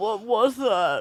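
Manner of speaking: play-acted, garbled talking through a full mouth. Retelling what a woman asked with her mouth full: imitating talking with mouth full. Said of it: "with her mouth full of poppers".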